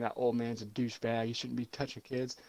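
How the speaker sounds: normal talking voice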